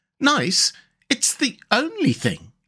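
grave, solemn storybook tone, very high, slow, swooping. Leaning forward to row, the Water Rat answers his young friend, solemn. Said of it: "said the water rat solemnly".

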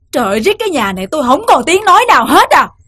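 ordinary delivery, nothing marked

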